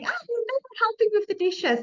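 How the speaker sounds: very high, piercing, shrill shout. Showing how not to speak to a husband, the speaker demonstrates shouting. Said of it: "shouldn't be shouting".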